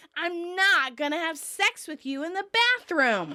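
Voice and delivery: imitated loud shout. Retelling a scene where the character shouts for everyone to hear: imitating a loud shout. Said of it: "Ross shouts loudly so that everyone can hear".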